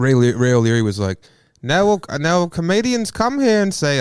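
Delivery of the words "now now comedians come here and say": put-on, higher-pitched New Zealand accent. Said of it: "That's you doing a New Zealander".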